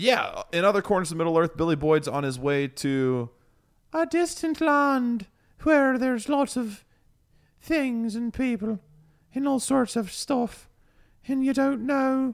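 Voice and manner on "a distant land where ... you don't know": drawn-out, very high, slow British accent, narration style. Narrating a Middle-earth story to the group, in a British accent. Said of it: "I just went to a British accent".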